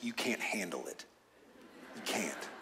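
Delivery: hushed, breathy movie-star voice, almost whispering. Discussing what God says to Moses, dropping in a Jack Nicholson impression. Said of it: "In your best Jack Nicholson voice".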